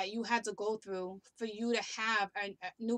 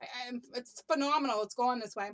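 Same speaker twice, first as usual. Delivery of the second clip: usual speaking voice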